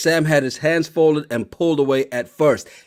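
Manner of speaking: plain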